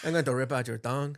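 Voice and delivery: put-on Mexican accent. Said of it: "a [name] and [name] accent".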